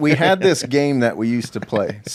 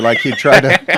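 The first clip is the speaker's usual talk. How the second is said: normal talking voice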